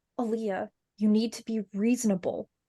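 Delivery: voice kept low. A woman speaks, trying not to be obvious, lowered voice. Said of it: "she sort of lowers her voice".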